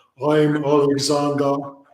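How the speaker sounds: put-on strong, pompous English accent. Describing a pompous old Englishman, imitating a strong English accent. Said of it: "big, strong English accent".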